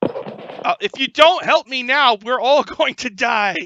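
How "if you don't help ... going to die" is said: very high, very loud character shout. Voicing a character who begs the party for help: yelling in character. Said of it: "he yells".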